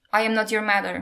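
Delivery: plain reading voice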